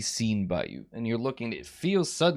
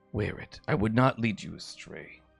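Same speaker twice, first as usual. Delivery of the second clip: soft, hushed half-whisper; 2 semitones lower than usual. Voicing her as she speaks to the player's character, half-whispering. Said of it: "She she she whispers to you".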